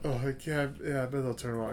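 speaking softly. Retelling answering Dad at the movies, in a softer voice. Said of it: "Trying to talk in a softer voice".

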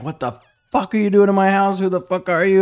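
high, acted-out screaming. Retelling confronting a stranger in his house, retelling a scream. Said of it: "I'm just screaming at him".

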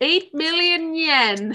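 campy villain delivery. Recounting a story about a broken vase, in an Austin Powers voice. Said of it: "Why do I have to say it like Austin Powers?".

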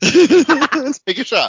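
high, loud laughing and giggling.

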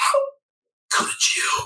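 gasping, strangled, choked, gurgling whisper. A wounded mother speaks from behind you in a choking, gurgling voice. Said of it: "your mother's choking voice from behind you, gurgling gasps".

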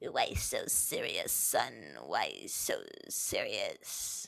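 very slow, breathy villain near-whisper. Answering the co-host who says the topic is serious: Joker voice. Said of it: "Okay, Joker".

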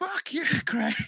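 mock very high scream of a huge crowd. Retelling how thousands at a festival screamed at a friend: imitating a crowd screaming. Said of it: "just screamed".

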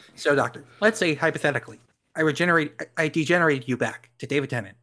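squeaky, high, chipmunk-like political commentator voice. Playing a movie figure who addresses the doctor with a hypothetical, Ben Shapiro voice. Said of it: "I don't know why I'm using Ben Shapiro's voice".

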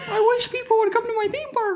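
squeaky voice pitched way up high. Playing both sides of a chat with Mickey, answering as him: Mickey Mouse impression. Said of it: "was that accent or that impression good enough".

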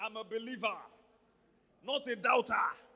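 full-voiced, very loud Nigerian accent. Leading the audience in repeating a phrase, nigerian accent. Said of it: "Say it like a Nigerian person".

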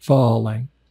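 Falang with the weight on first syllable Fa. Showing how Thais say the word Falang: stress first syllable of Falang. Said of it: "The Thais say it more with the emphasis on the first syllable".

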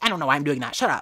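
harsh, aggressive scolding outburst. Retelling snapping at oneself mid-podcast: imitating aggressive self-talk. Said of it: "I'm so aggressive with myself".

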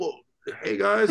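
put-on high, creaky talk through a mouth full of food. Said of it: "my mouth is all full of, like, pasta".

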